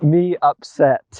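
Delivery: talking like a caveman. Told to speak like a caveman throughout the task, the player uses caveman speak. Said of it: "you must speak like a caveman throughout the task".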